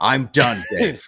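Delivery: play-acted, politely passive-aggressive tone. Imitating the other speaker's reply back to them: mocking a passive aggressive tone. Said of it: "That sounded passive aggressive".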